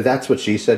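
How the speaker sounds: ordinary delivery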